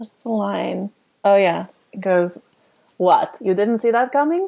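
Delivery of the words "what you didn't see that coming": high put-on vampire count voice with Transylvanian accent. Asked for their impression, the guest delivers the movie line in a Dracula-style voice. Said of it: "my version's a little more Dracula than".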